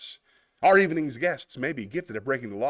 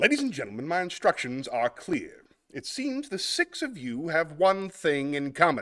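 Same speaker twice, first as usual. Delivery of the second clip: put-on, rough attempt at an English accent; 3 semitones higher than usual. Performing a monologue from Clue: Tim Curry English accent. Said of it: "I can't do the English voice properly, but I will try my best".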